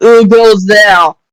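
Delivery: put-on French accent. Voicing the guard to the Space Vatican: French accent. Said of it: "it's French".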